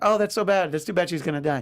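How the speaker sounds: plain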